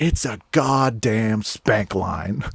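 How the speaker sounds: put-on angry voice. Retelling the story of getting kicked out, imitating his angry reply. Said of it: "it made him like more angry".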